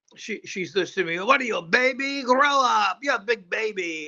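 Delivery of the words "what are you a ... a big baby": heavy put-on Mexican accent, pitched up. Retell what the lady with the needle said back to you, in a thick Mexican accent. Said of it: "The thick Mexican accent".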